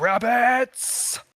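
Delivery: very high, booming shout filling the space. A character steps out of the hut and calls to his people: very loud booming shout. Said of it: "he says it very loudly, and his voice booms all around".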